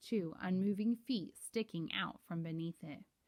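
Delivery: ordinary delivery, nothing marked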